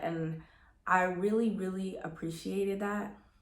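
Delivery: teary voice choking up, near tears. Speaker recalls their mom's trust in God while growing up, about to cry. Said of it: "I'm already about to cry".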